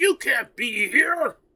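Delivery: shrill, high-pitched yell at full volume. Game master voicing a character who yells at a player's character: yelling. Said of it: "He yells at you".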